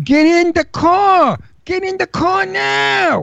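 put-on very high, stretched scream in a Brooklyn accent. An actor recalls ordering a woman into a car in a movie; retelling a Brooklyn-accent scream. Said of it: "I did it with a Brooklyn accent".

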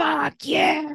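mock wild, high, raging, furious scream. Retelling a screaming woman chained to a tree: imitating someone screaming. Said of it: "And she's screaming at me".

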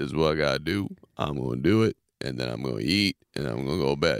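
very deep, mechanical, robotic man's voice, low delivery. Speaker imitates a man he calls just a robot: robotic imitation of a guy. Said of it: "I don't know if that was a good imitation".

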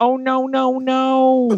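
very slow, each no stretched long. Doing an Owen Wilson impression, this time in denial: Owen Wilson in denial. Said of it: "Owen Wilson in denial".

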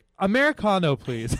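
acted curt, brusque tone. Retelling a drive-thru order while imitating Kurt: no time for chat. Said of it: "He's just like".

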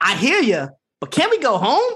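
high put-on voice with wide, swooping pitch. Retelling what Jack said back to her, in his best AJ Styles voice. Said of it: "in his like best aj styles voice says".

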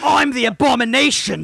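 put-on British accent. Joking about the monster character speaking British: mock British Abomination voice. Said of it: "if he talks like that".

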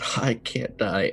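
soft, unvoiced, terrified whisper full of panic.

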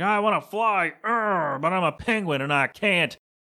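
slow, mopey, defeated, bummed-out sulk. Retelling a cartoon scene about birds who can't fly: imitating a bummed-out penguin. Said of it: "they're all bummed out".

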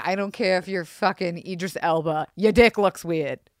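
New Jersey accent. Joking with Zach on a podcast, slipping into a New Jersey accent. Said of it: "I don't know why I got a New Jersey accent".

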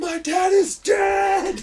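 very slow, shrill, high, booming, drawn-out scream. Speaker retelling a man screaming at a girl on her birthday, retelling a scream. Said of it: "he's screaming at this girl".

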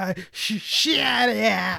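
high, creaky, very slow drawl, "yeah" dragged out. Describing an angry movie character, doing an Adam Sandler impression. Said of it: "as Adam Sandler does".

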